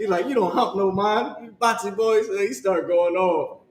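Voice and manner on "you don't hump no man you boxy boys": put-on Jamaican accent in a pitched-up man's voice. Retelling a TikTok guy's joke about hiring a Jamaican: imitating a Jamaican accent. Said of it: "the way he said it sounded like hump a man".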